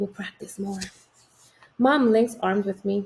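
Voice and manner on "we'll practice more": hushed, soft, close half-whisper. Reading a story aloud, a brother speaking into someone's ear: half-whispering. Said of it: "he whispers in, in my ear".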